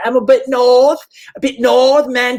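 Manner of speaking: put-on very high, slow, drawn-out Scottish accent. Retelling a conversation, quoting a woman's reply in a Scottish accent. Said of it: "doing a what it seems to be a Scottish accent".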